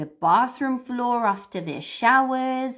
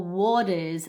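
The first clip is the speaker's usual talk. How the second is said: waters said with a slight Australian accent; 3 semitones lower than usual. Saying accent doesn't matter, showing a slightly Australian accent on waters. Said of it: "that is a little bit more Australian".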